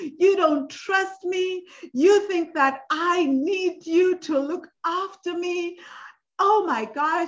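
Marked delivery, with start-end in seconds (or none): 0.0-5.8 high, slow, raised, heated yelling outburst. Recalling fights with him, the speaker re-enacts what they shouted: retelling a screaming fight. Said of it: "I would literally have screaming fights with him".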